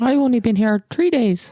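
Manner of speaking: implausible, fake-sounding put-on Irish accent. In a role-play scene, answering how long they've lived in the temple, unconvincing put-on Irish accent. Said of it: "Your your Irish accent doesn't sound plausible".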